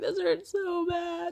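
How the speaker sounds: high, drawn-out crying out through pain. Retelling own words during labor pain: imitating own past crying.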